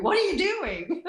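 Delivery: acted-out scream. Retelling the lady with the barnwood coming out, retelling a woman screaming. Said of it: "she's screaming at me".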